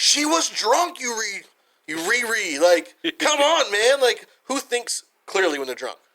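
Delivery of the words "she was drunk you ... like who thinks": loud, raised-pitch yell. Retelling how she yelled back at Zach while listening, retelling a yell. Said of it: "I'm yelling back at him like".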